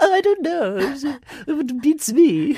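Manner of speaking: put-on very high, very slow old-woman drawl. Teasing the other speaker by imitating how they sound. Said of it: "was that how I sound?".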